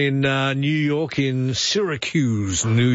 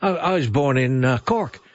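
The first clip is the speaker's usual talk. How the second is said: ordinary talk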